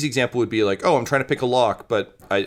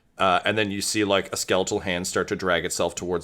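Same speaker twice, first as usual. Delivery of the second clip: normal talking voice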